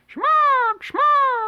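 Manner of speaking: very high, very loud, shrill vulture screech. Speaker explains the phrase as the cry of a jungle bird, jungle bird call imitation. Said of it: "jungle birds or vultures you see in Tarzan movies where they flap their big dusty wings and go".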